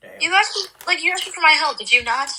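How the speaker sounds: high, exasperated, fed-up tone.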